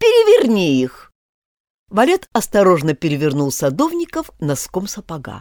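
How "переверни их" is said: cross, imperious, angry, commanding. The queen turns away from the king and orders the Knave, angry order. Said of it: "сердито отвернулась от него и приказала".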